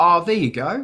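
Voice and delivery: put-on very broad Australian accent, easy relaxed tone. Retelling Al's reply about an instrumental album, imitating Al's Australian accent. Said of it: "he said it in a very Australian Al accent".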